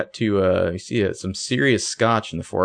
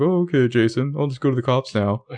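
mock pushover manner. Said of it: "You've just been like".

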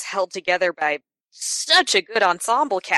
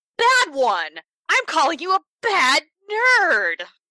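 playful put-on yelling, very high, swooping; 9 semitones higher than usual. Scolding listeners who haven't seen the film: mock yelling at the audience. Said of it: "are we done yelling at our audience?".

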